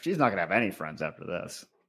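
acted under-breath mutter. Retelling what a man said under his breath at the end, imitating a mutter. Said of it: "under his breath at the end".

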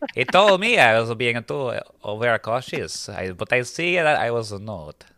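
put-on French accent. Reading the part of Louis at a script read-through, Louis's fake French accent. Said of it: "that accent is really".

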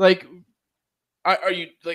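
usual speaking voice

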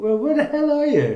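very high, loud, baffled mock squeal.

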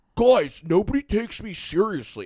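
very high, loud, thick-tongued speech. Describing a guy named Josh on the show, imitating Josh's thick-tongued talk. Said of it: "His tongue's, like, too big for his mouth, so he talks like".

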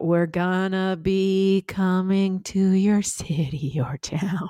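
very slow, drawn-out, sinister, menacing intonation. Showing how the show's line sounds with changed intonation: menacing threatening intonation. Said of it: "if you just change the intonation just a little bit".

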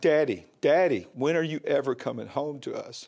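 ordinary talk

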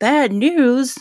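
high, loud, startled, surprised voice.

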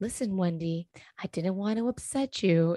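low, deep, unruffled calm voice. Recapping a scene, quoting her line to Wendy, imitating Erica Jane's deep, calm voice. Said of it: "deep, calm voice".

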